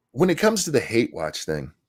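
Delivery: plain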